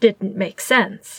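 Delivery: ordinary delivery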